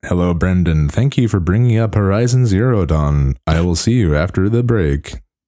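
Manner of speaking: robotic talking voice. Addressing the other speaker before a break, robot voice. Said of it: "Why am I talking like a robot all of a sudden?".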